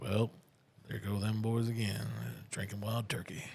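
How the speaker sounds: put-on folksy narrator voice. Imagining a voiceover for drinkers: Sam Elliott narrating voice. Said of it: "Sam Elliott doing the voiceover, but in the style of the guy from Dukes of Hazzard".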